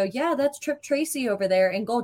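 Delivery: play-acted casual, super nonchalant, totally unbothered. Retelling what someone said as the team walked up to the boards, mock-nonchalant. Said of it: "just super nonchalantly".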